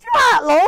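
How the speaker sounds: put-on high, loud crow voice with a Yorkshire accent. Describing a news video of a talking crow, crow with yorkshire accent. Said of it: "a crow speaking with the Yorkshire accent".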